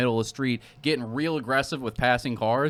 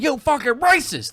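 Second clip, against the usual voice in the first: acted very high, shrill, loud screaming yell; 12 semitones higher, 5 dB louder than usual. Retelling a man screaming at a trucker: imitating someone screaming. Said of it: "and then I hear him screaming".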